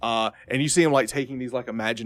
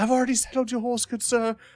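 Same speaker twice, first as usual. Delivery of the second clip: put-on very high young boy's voice; 12 semitones higher than usual. Voicing the boy who brings the lance to the player: voicing the boy. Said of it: "he goes".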